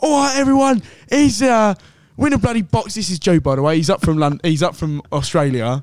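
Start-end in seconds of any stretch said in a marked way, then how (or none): 0.0-2.9 mock scream, much higher and louder. Telling a football story, acting out a man filming a video before kickoff: retelling a scream. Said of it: "He's screaming at like".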